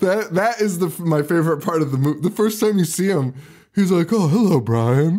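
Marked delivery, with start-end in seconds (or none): 4.1-5.2 very proper, terribly polite delivery. Retelling how the worm monster greets people: imitating Aylmer's proper voice. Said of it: "He's, he's so proper".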